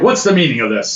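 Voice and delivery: stern, authoritative, commanding voice. Narrating, the speaker voices a woman as she walks into the room: stern, commanding voice. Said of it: "Very stern, very commanding voice".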